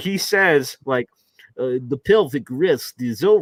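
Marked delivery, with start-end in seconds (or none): 1.9-3.4 poorly done, failed put-on Swedish accent. Retelling what the doctor said about pelvic rest, in a bad swedish accent. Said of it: "that's not Swedish at all".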